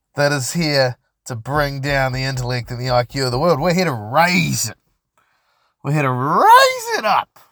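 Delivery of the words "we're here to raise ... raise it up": weird, odd put-on voice, pitched up. Podcast host addressing listeners, in a weird put-on voice. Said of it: "that was a weird fucking voice".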